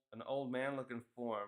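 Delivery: ordinary talk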